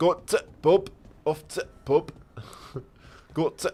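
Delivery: broad, full-on Yorkshire accent. Contrasting yorkshire and geordie accents with an example, yorkshire accent. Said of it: "Yorkie would be like".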